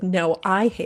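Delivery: heated, insistent, argumentative back-and-forth tone. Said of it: "we got louder and louder".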